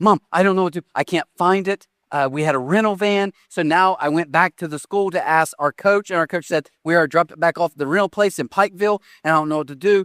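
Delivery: ordinary delivery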